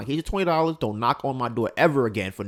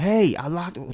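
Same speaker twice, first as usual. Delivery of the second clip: put-on scream, higher; 6 semitones higher than usual. Retelling a neighbor kicking his door at night: imitating someone screaming. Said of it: "just screaming".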